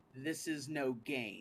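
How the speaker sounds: serious, weighty, grave solemn tone. Speaking through a Thaumaturgy spell, booming voice. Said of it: "and booming voice".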